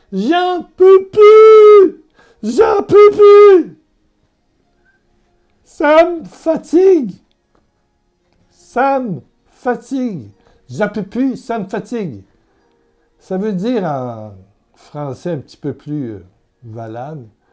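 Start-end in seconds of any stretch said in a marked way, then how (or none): 0.1-12.2 very high, very loud, drawn-out howling. Retelling how a hospital patient howled in despair: imitating a man howling. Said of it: "quand je dis crier, c'est hurler".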